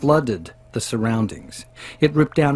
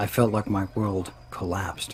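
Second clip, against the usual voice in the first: ordinary delivery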